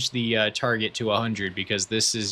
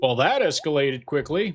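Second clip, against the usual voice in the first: deliberately bad put-on anchorman voice, pitched up; 6 semitones higher, 3 dB louder than usual. Quoting a film line as a poor Will Ferrell impression. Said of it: "There's my poor impression of Will Ferrell".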